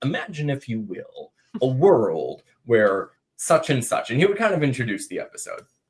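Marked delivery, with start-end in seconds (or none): 0.0-4.1 dramatic TV narrator voice, like a program opening. Retelling how the host introduced each episode: Rod Serling narrator voice. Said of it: "he'd be like".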